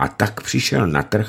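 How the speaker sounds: ordinary delivery, nothing marked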